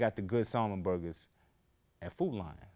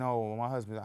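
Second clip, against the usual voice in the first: ordinary talk, nothing marked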